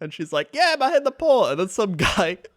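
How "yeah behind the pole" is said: shrill, very high, loud yelling. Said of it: "she's, like, yelling at him".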